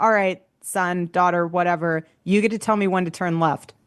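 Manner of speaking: normal talking voice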